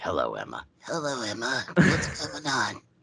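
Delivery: slow, swooping, put-on creepy killer voice. Trying a prank-call voice after being told to sound like a killer; killer voice. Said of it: "killer from like 30 years in the future".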